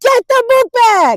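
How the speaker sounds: shrill, very high, loud screaming. Retelling grabbing an armadillo by the tail, retelling screaming at top of lungs. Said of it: "while screaming at the top of my lungs".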